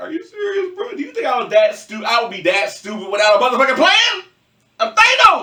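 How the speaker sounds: talking through laughter with swooping pitch. Retelling a comic scene where the character laughs at a threat: mock laughing while talking. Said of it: "They must have started laughing like".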